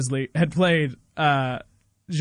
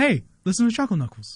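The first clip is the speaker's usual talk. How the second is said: put-on Boston actor voice, higher; 5 semitones higher than usual. Showing a touchstone line for an impression: Mark Wahlberg voice. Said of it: "I have one for, uh, for Mark Wahlberg".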